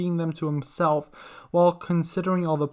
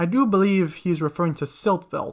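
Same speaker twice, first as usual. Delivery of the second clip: usual speaking voice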